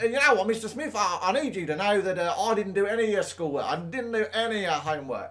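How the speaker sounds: put-on Australian accent. A teacher retelling what students say to him, in a put-on Australian accent. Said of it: "I don't know why I got an Australian accent now".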